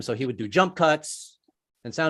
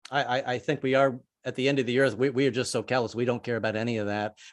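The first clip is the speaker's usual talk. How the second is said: ordinary delivery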